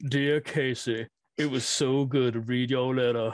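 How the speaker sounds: drawled, southern style. Quoting one of Cameron Poe's quotable lines: Cameron Poe southern drawl. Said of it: "the southern drawl is just there".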